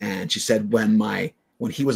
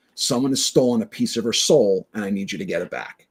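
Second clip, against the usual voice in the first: plain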